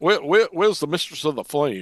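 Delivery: drawn-out Southern Georgia accent. Trying out different accents with the others, Southern Georgia accent. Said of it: "that's that's Southern Georgia".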